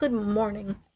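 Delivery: speaking in a whisper. Retelling greeting the cat early in the morning while everyone sleeps: whispering. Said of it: "in a whisper".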